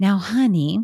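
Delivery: put-on, very sweet, sugary voice. Imitating her mother advising her as a new mother, in a put-on very sweet voice. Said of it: "in this very sweet voice".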